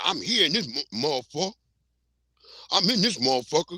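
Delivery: put-on robot character voice. Retelling how the robot Mohawk talks in the movie: imitating the robot Mohawk. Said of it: "talking about".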